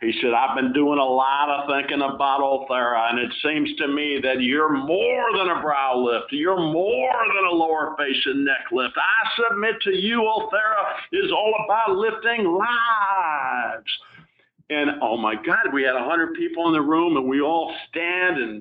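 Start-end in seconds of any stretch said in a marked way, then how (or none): 0.3-13.9 slow, stretched Texas drawl, lives drawn out. Quoting a conference guest from Austin addressing the room, in a deep Texas drawl. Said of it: "He's got this deep Texas voice, you know, and he's talking in a drawl".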